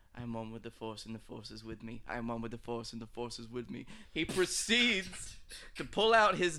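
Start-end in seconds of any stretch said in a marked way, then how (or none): 0.2-3.9 mock mutter under breath, much quieter, lower. Retelling a scene where troopers surround a man, retelling a mutter under breath. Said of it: "you just hear him mutter under his breath".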